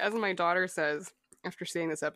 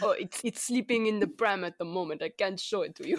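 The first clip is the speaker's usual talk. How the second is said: deliberately bad, fake German accent. Retelling a scene where Werner takes a call, in terrible space German accent. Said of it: "This is our terrible space German accent".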